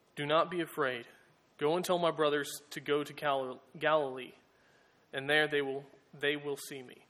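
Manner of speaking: ordinary talk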